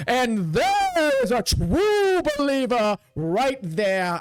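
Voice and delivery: very slow, stretched, booming commander voice. Narrating a scene, speaking as the High Commander spotting you: booming voice. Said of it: "In a booming voice".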